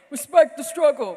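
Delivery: booming, very loud proclamation. Retelling a freshman class meeting, imitating a booming voice: Ross impression. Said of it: "Not my best Ross impression".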